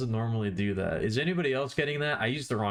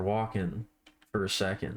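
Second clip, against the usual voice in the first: usual speaking voice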